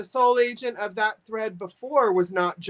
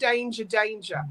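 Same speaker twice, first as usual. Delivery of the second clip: put-on Australian accent; 7 dB quieter than usual. Summing up an entry's feel, in an australian accent. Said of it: "also my Australian accent".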